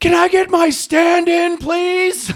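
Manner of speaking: very high shout from the top of the lungs. Retelling how a background extra suddenly yelled on set, retelling a shout. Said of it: "at the top of his lungs".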